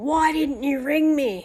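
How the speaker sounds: put-on angry, hostile scream, pitched high. Retelling how a homeowner screamed about lateness: imitating aggressive screaming. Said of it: "he's screaming at me really aggressively".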